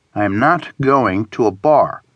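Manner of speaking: ordinary talk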